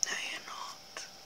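unvoiced, hushed whisper.

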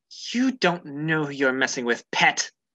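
growling, threatening voice. In a role-play game, a character speaks to a creature gnawing on her shield, growling. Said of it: "She growls and she says".

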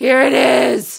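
slow, guttural growling cry.

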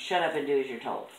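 usual speaking voice

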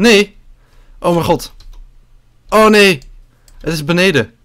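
high, alarmed, panicking exclamations. Streamer in a zombie game finding it downstairs, panicking.

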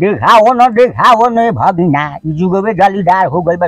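put-on quick Bhojpuri old man voice.

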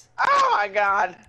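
all-out loud screamed exclamation. Reacting to another player while driving in the game: screaming. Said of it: "What are you screaming about?".

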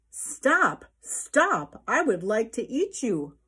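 loud shouting voice. Narrator reading a pig's line to the fleeing gingerbread man, shouting. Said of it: "shouted the pig".

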